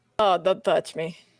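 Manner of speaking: put-on Russian accent. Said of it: "Russian furball lady".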